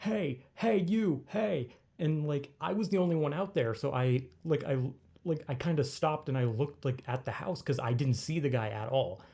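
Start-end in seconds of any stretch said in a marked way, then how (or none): 0.0-1.7 put-on, very slow, stretched-out calling out. Retelling how an unseen man at a house started shouting, imitating a guy shouting. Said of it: "then he like just started shouting like".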